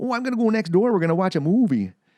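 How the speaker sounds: laid-on North Dakota accent. Chatting about a North Dakota accent, the speaker tries it in a Fargo accent. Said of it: "the Fargo accent".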